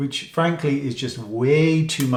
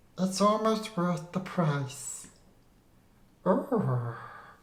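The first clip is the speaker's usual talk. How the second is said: put-on spooky ghost voice, high and hushed; 5 semitones higher, 9 dB quieter than usual. Reviewer talks to viewers about a palette in a scary voice. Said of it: "Scary voice".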